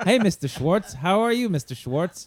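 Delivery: friendly, polite tone, high-pitched. Retelling how father greeted the cat at the door: imitating father greeting cat like a person. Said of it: "he'd talk to this cat like it was a per-".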